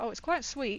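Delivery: ordinary talk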